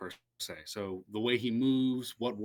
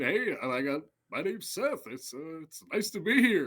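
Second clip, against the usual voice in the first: relaxed, pitched-up, uh-filled casual speech; 7 semitones higher than usual. Showing the different kinds of impressions: Seth Rogen impression. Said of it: "But Seth Rogen, you know".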